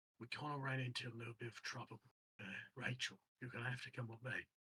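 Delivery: hushed undertone. Game master as a character who leans in toward the group, lowered voice. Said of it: "Lowers his voice".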